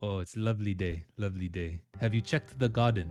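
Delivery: improvised put-on South African accent. Playing a character who greets everyone, in a south african accent. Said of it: "That's my best South African accent you're gonna get".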